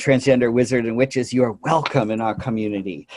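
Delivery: ordinary talk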